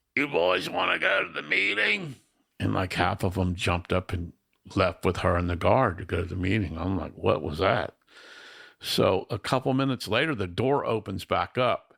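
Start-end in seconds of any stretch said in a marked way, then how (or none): 0.2-2.2 very high, rough, creaky, raspy voice. Recounting a lady who came into his cell with the guard, raspy heroin-alcohol voice. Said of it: "she had a raspy heroin alcohol voice".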